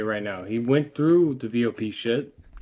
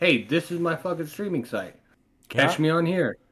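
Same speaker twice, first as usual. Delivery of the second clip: usual speaking voice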